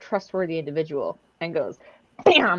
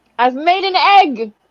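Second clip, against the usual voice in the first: shrill, high, loud, booming proud shout; 10 semitones higher, 11 dB louder than usual. Retelling a story, the speaker acts out their own past shout: retelling a shout. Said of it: "I shout".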